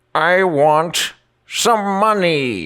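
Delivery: odd character voice, very high-pitched, very slow, crawling. Showing a new character who raises a middle finger: Professor Mad character voice. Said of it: "and he goes".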